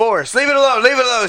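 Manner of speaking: shrill, very high, very loud scolding yell. Retelling how she yelled at Forrest while he chased a rat, retelling her yelling. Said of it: "She's like yelling at it".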